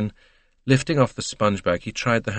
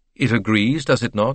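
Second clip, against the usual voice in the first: ordinary delivery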